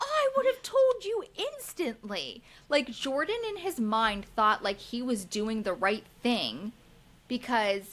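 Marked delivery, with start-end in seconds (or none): 0.0-2.4 acted, very high-pitched, furious angry freak-out. Retelling a reality show argument where Dakota flips: imitating an angry outburst. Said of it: "Dakota flips and says".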